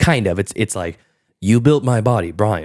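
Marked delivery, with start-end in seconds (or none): 1.4-2.6 pre-programmed, robotic machine speech. Retelling a movie robot's lines: Stephen Hawking type voice. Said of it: "a Stephen Hawking type voice".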